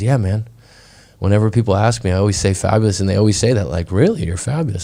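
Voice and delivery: ordinary talk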